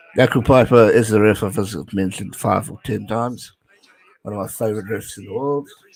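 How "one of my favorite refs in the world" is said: soft voice with audible sarcasm. You are talking about a ref you have mentioned many times; be sarcastic. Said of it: "Hear the sarcasm in my lovely voice".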